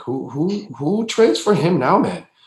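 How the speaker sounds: put-on casual Brazilian accent. Retelling a pregame remark while watching a telecast, in Leandro Barbosa's Brazilian accent. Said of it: "in his Brazilian accent".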